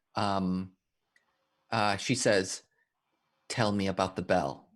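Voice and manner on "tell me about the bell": husky, roughened, hoarse, rasping voice. Narrating a character who leans toward the player, in a quiet, hoarse voice. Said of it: "quiet, hoarse voice".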